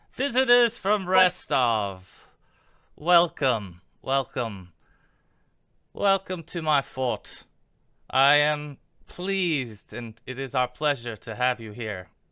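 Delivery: sharp, shrill, piercing character voice. A narrator voicing a gnome who suddenly speaks up, shrill Tartuccio voice. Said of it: "kind of shrill voice".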